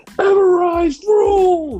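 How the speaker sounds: imitated loud yell. Retelling what a tag team did at the end: imitating them yelling. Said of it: "they just yelled".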